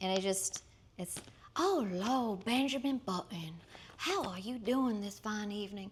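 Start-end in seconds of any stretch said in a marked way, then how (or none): 1.6-5.9 very affected, over-the-top, campy put-on Southern accent. Mocking a film's put-on accent, doing an over-the-top fake Southern accent. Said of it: "very affected Southern accent".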